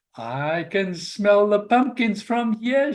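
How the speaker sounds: high, squeaky little mouse voice. Narrator reading a story, voicing a curious character's line, squeaking. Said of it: "she squeaked".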